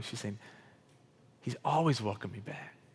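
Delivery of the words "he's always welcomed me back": imitated tearful crying voice, much quieter. Speaker retelling what a woman said, imitating her crying. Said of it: "She's like crying".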